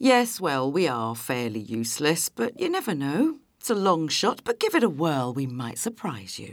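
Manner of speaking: heavy sarcasm with swinging pitch.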